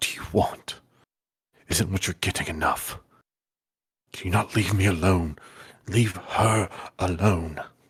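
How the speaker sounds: muttering under breath. Voicing a character asking to be left alone, muttering under his breath. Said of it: "you hear him under his breath saying".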